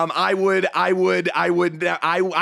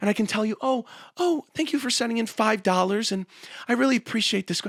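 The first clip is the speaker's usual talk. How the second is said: quiet, hushed, toned-down, tame voice; 4 semitones higher, 4 dB quieter than usual. Told to tone it down, speaking to the audience in a quiet, toned-down voice. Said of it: "I can talk to you guys like this".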